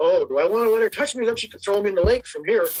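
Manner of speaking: ordinary delivery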